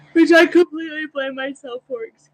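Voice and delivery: high, loud, yawn-stretched words.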